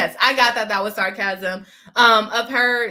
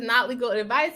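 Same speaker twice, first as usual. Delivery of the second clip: ordinary delivery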